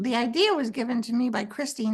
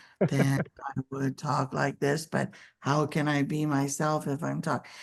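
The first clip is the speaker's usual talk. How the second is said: low, deep voice stepping down in pitch; 10 semitones lower, 3 dB quieter than usual. Speaker demonstrating the voice they were told to practice, low voice, like walking downstairs. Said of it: "if I talk like I'm going downstairs".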